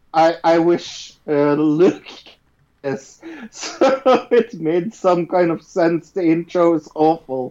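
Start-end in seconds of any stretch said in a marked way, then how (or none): 1.5-7.5 words broken up by laughter while talking. Giving a first note about episode one, laughing while talking. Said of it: "You kinda broke up 'cause you were laughing".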